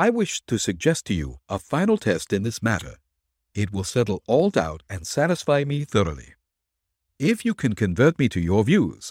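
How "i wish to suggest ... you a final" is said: plain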